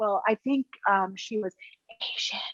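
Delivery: barely voiced, hushed, secretive whisper. Acting out someone naming a person's race: imitating someone whispering. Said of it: "if they're whispering".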